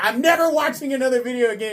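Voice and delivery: super upset, high-pitched outburst. Retelling a commenter storming out: imitating an upset commenter.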